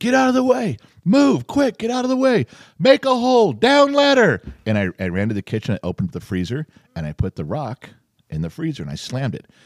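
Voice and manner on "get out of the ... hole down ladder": put-on loud, very high hollering shout. Retelling running to the freezer with a rock, retelling a yell. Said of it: "I'm yelling".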